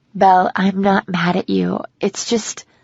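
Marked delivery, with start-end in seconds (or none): none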